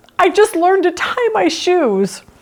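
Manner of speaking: put-on high, tearful, sobbing little-girl voice. Telling a story about a girl and her parents, retelling a girl's sobbing. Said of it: "And she sobbed".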